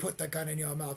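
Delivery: mock villain laughing while talking. Retelling a film villain's line as she laughs: imitating a villain laughing while talking. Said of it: "And she's laughing".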